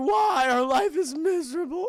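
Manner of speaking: put-on acted tearful child-like sobbing, high and drawn out. Retelling a cartoon scene where the kids start crying: imitating crying kids. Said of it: "they start crying".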